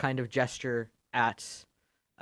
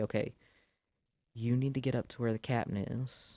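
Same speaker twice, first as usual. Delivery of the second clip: very quiet, hushed, murmured voice; 6 dB quieter than usual. Moira looks at Lily and gives her an order, speaking very quietly. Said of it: "very quietly say".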